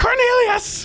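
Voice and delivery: panicked, shrill shriek, very high pitch. Voicing a character in the game who starts screaming when questioned, screaming.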